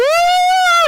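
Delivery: put-on high, loud, terrified child scream. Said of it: "and they're screaming".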